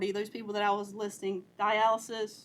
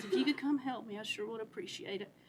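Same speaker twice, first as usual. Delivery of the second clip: put-on weak, frail old lady voice, much quieter; 7 dB quieter than usual. Retelling a little old lady's phone call asking for help: imitating a weak, frail voice. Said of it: "She told me with such a weak and a frail voice".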